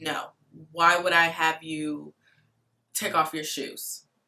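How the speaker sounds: snippy, rude tone full of attitude. Retelling how a signer's husband answered at the door, imitating a man with attitude. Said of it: "With an attitude".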